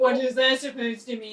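scornful, mocking, parroting voice. Mimicking the other speaker's question back at them: mocking imitation of another player. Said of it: "That's what you sound like".

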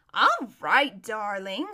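languid, easy-going, unhurried drawl, fairly loud. Narrating a woman's reply to an urgent plea to hurry, in a lazy voice. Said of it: "said Lasserelline in her lazy voice".

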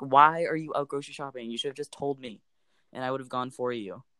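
ordinary talk, nothing marked

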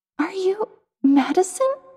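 put-on very high girlish childlike voice over metal rumble. Reading a story, the narrator voices a great train asking a question, high childlike metallic voice. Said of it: "Its voice is high-pitched and feminine, like a child's, with a deep, rumbling, metallic undertone".

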